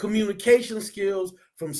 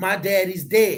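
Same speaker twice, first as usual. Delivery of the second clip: ordinary talk, nothing marked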